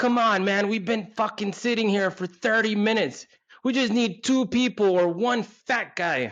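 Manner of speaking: fake shout.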